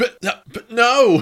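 high, loud, slow cry of disbelief.

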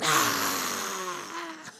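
hostile, rough, creaky, swooping growling groan. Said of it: "It's like Gollum".

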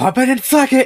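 very loud, very high, shrill holler. Retelling the speaker's grandpa yelling as he goes outside: retelling a yell. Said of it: "he just yells".

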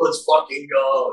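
mock excited, high, hyped-up burst of cheering. Retelling a buddy's reaction at the bar: imitating a buddy screaming. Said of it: "he started screaming".

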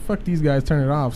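ordinary delivery

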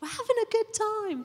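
loud, high called-out yell.

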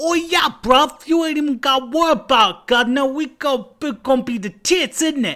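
shoddy, high-pitched put-on Cockney accent. Asked if the band is ready to record, answer in a bad Cockney accent. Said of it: "you had such a shitty Cockney accent".

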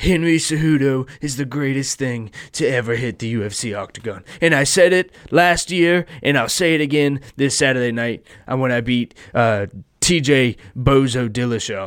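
cocky, swaggering boastful voice, deliberately badly done. Imitating a fighter boasting before a fight: terrible Trump impression. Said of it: "That was a terrible Trump impression".

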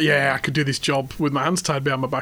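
ordinary talk

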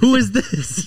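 put-on alarmed cry, shrill and very high-pitched. Retelling how a friend's mom answered from the car: imitating a panicked voice. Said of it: "you could hear the panic when she's like".

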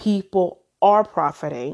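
plain

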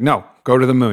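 stern, firm, no-nonsense voice. Retelling how the shaman told the speaker to go to the moon: imitating a stern command. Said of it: "He was very stern".

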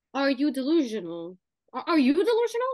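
put-on New Jersey accent. Speaker who just started watching Jersey Shore quotes the show in a Jersey accent. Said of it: "now I've been talking in a Jersey accent".

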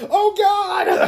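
very high, loud, scared shriek. Retelling a scene where a vampire faces a stake: mock-scared vampire. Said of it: "the vampire's all scared".

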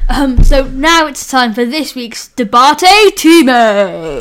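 loud, sweeping, big show announcer call.

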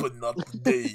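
deep, low, dramatic movie-style delivery. Quoting a movie line: Vin Diesel impression. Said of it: "People just walk up to Vin Diesel".

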